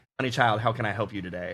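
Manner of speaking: mock Georgia grandma voice. Retelling a call to the airline, voicing the agent who answered: imitating a Georgia grandmother.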